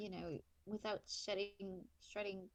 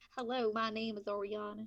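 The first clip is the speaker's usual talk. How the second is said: put-on loud American southern accent; 8 dB louder than usual. Introducing herself as oriana after turning southern, in a southern accent. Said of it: "she has a southern accent now".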